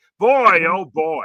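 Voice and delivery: booming, very loud, full-volume exclamation. Showing how a friend does the announcer voice: Harry Caray voice. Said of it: "cracked the code on how to do the voice".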